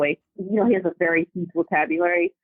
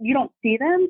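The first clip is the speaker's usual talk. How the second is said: put-on high, cracking, disappointed kid voice; 7 semitones higher than usual. Retelling her child asking if she sees the rings: imitating a voice cracking with disappointment. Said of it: "the crack in his voice of disappointment".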